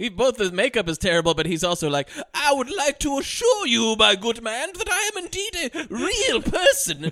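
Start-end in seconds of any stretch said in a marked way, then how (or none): 2.3-7.1 over-the-top, cartoonish, very high British accent. Mocking a movie character with terrible makeup, in a cartoonish British accent. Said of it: "I talk in a cartoonish British accent".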